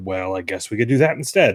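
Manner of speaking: heavily sarcastic, going-along tone. Describing the companion reacting when the player takes another path, sarcastic Atreus impression. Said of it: "Like really sarcastic".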